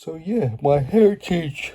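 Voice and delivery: words drawn out while yawning. Having been on late shifts, the speaker talks while yawning. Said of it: "Sorry, I'm yawning".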